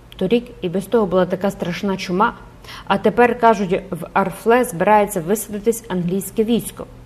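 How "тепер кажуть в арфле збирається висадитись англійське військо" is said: ordinary delivery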